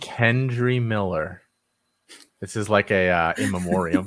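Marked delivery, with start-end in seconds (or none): 0.0-1.4 very slow, drawn-out, deliberate, pitched-up reading aloud. Reading off a list of player names after promising: reading very slowly. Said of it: "I'll read real slow".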